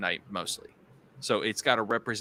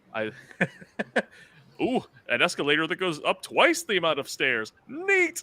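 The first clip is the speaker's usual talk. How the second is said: sing-song, pitched-up, swooping cartoon dad voice; 8 semitones higher, 3 dB louder than usual. Praising the show's voice acting, the speaker quotes a line in Timmy Turner's dad voice. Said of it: "Love Timmy Turner's dad".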